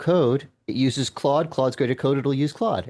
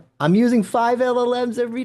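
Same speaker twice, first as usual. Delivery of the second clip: very high, yelled outburst; 10 semitones higher, 4 dB louder than usual. Answering another speaker in a conversation, yelling. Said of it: "Sorry for yelling".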